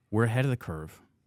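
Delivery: plain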